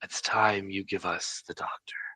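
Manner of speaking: barely audible, very soft, hushed whisper. A game master voices one of three figures behind a table, in a very soft whisper. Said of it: "says in a very soft whisper".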